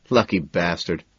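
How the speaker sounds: ordinary delivery, nothing marked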